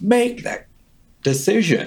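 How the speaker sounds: acted-out very high shout. Retelling what she yelled at the speaker about the decision, retelling her yell. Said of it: "And she yells like".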